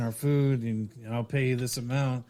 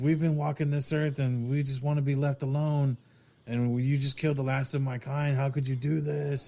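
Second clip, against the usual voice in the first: acted crying, mock-crying creature voice; 2 semitones higher than usual. Retelling a movie scene where a creature pleads, imitating a crying creature. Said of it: "He's crying".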